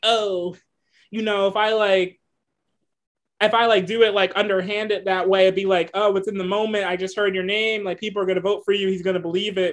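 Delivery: plain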